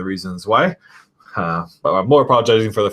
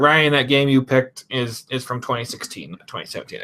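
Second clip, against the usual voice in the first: higher nerdy put-on voice; 5 semitones higher than usual. You're mocking an imagined viewer who corrects your game picks in the comments, in a nerd voice. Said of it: "That's my nerd voice right there".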